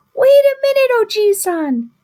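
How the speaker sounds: tiny, very high little voice, shouting. Narrator reading the story, a voice from the peach stops the old man: tiny shouting voice. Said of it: "a tiny voice shouted".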